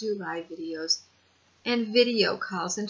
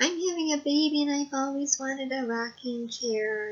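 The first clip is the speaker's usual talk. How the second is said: high, tearful, whiny crying voice; 6 semitones higher than usual. Speaker retells how someone asked for the speaker's rocking chair, imitating a whiny, crying voice. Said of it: "in a really whiny, cryy voice".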